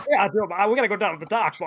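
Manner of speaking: put-on cartoon rooster voice. Imagining Foghorn Leghorn in the world of Claire Obscure, in a Foghorn Leghorn voice. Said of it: "I'm imagining like Foghorn Leghorn".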